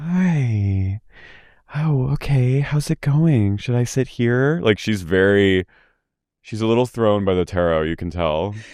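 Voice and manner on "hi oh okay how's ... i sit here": reverent, gingerly, high, drawn-out hi. Retelling how Heather approaches Terrence, imitating Heather's quiet reverence. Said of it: "quietly is like reverent".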